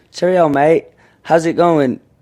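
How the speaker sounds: put-on Australian accent sliding into British. Showing what Brits say that Aussies don't: Australian accent sliding into British. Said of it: "doing an Australian accent into a British accent".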